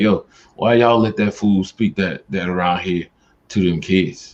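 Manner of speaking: normal talking voice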